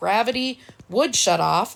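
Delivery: plain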